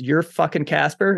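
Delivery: put-on, furious, very angry, confrontational delivery. Retelling how a man at officer training confronted him, acting out the angry line. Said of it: "very angrily goes".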